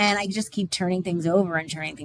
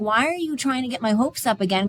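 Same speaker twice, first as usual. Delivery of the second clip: mock furious, angry, heated voice; 5 semitones higher than usual. Retelling own past words to another person: retelling own angry words. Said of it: "I'm getting so angry at him going".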